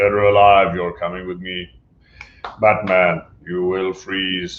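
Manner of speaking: flat, level, monotone robot voice. Quoting a villain from the animated series addressing Batman, in a RoboCop voice. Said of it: "he sounds like RoboCop. He's like".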